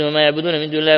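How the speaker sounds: normal talking voice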